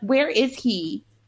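mild, half-voiced scream. Retelling a scene where a mother learns her son has died: imitating someone screaming. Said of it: "she's, like, screaming".

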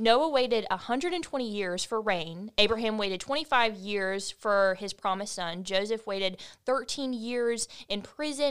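plain

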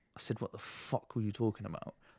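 put-on menacing tone. Retelling a drill instructor confronting him face to face; mock-sinister threat. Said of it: "so sinister".

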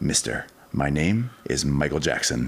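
normal talking voice

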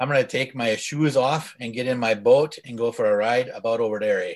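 attempted Canadian accent. A speaker tries out his Canadian accent for the others: Canadian accent. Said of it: "he's going to try out his Canadian accent tonight".

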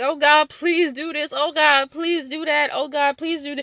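high, begging, pleading voice. Acting out someone praying, begging and pleading with god, mock begging god. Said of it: "begging and you're pleading God".

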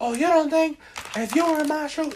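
needless showy yelling, very high and loud. Mimicking how Nicki talks to someone on her show, putting on a front, imitating Nicki yelling. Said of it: "why were you even yelling?".

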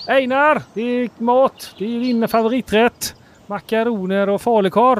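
Gothenburg dialect, very high. In an improvised scene, the father calls his son in for dinner; Gothenburg accent. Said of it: "Det låter han också som göteborgare".

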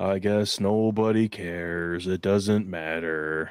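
low, cartoonish donkey voice. Taking turns doing Tigger and Piglet voices, Eeyore voice.

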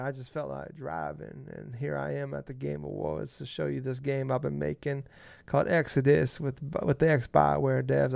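rasping, creaky voice. Retelling a Game Awards appearance, unsure it's a good Matthew McConaughey accent. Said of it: "I don't know if that's a good accent or not".

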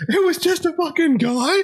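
acted-out, very high, slow, unhinged maniacal cackling. Retelling a reaction video of a guy who lost it: imitating someone laughing maniacally. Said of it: "laughing maniacally, like he's lost his mind".

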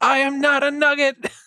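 high mock yell at top of lungs.

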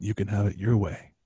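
seductive voice. Joking about making love to Burger King: sultry voice. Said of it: "Listen to my sultry voice".

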